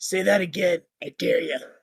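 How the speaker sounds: low, deep, quiet voice. Voicing a gnome who challenges from behind: deep voice. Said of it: "you hear a deep voice come from behind you".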